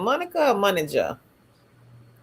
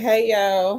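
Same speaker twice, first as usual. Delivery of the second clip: plain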